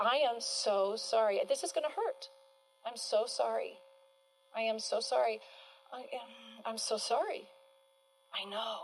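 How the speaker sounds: sympathetic, genuinely sorry, unsarcastic tone. Demonstrating how to answer someone protesting a consequence: empathetic. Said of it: "endure with empathy all the way through".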